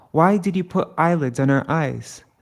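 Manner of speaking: plain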